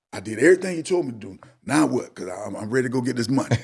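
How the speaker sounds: mock anxious voice, full of angst. Retelling a man's call after he did everything he was told: retelling anxious caller. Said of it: "with some angst in his voice".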